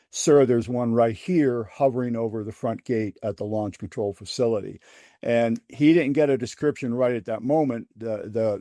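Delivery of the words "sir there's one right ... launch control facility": ordinary talk, nothing marked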